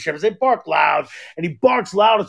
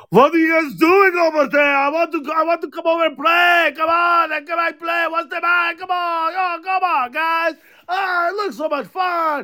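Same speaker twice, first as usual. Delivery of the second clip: put-on German accent, much higher pitch; 9 semitones higher than usual. Describing how he imagines his German Shepherd talking; Bandit in German accent. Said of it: "he's got like a German accent".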